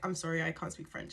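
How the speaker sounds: ordinary delivery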